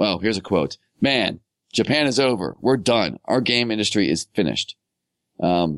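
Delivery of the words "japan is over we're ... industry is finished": plain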